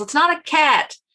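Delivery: half-hearted put-on yell of disbelief. Retelling how Joey yells about a hairless cat: imitating Joey yelling. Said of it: "he just yells".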